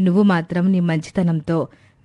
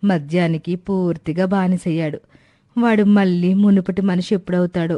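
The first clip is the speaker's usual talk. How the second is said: plain reading voice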